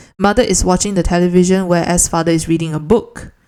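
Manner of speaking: ordinary talk, nothing marked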